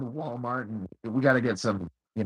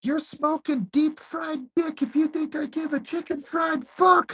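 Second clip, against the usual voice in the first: high, drawn-out hollering. Retelling what is heard from the other room: imitating someone yelling. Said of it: "you hear him yelling like".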